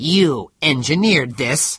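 hard accusing voice. A man confronts another man with an accusation: hard voice. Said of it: "His voice was hard".

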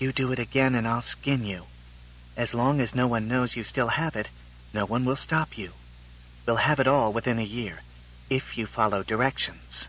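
menacing, hushed, threatening whisper under the breath. Embracing a man before a small audience, a woman speaks whispered. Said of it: "Susan whispered".

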